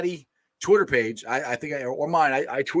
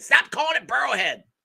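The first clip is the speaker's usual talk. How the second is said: play-acted shrill, raspy scream, very high; 11 semitones higher than usual. Imagining Dale watching right now, the speaker imitates Dale screaming. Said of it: "he's just screaming".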